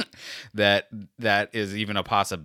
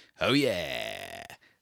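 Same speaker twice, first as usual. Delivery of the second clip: cheesy radio DJ voice, very low and creaky; 8 semitones lower than usual. Apologizing to listeners for the habit, cheesy radio guy voice. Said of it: "cheesy radio guy thing".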